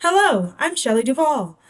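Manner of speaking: mid-range pitch. Pitch exercise on one phrase, restarting from the middle: mid-range pitch. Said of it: "start in the middle".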